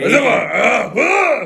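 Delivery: high, mock yell in fake Japanese-sounding gibberish.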